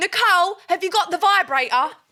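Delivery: mock bold, confident, full-throated yell, pitched high. Retelling walking into another person's room, re-enacting a confident, loud scream. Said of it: "in the most confident, loud voice, I scream".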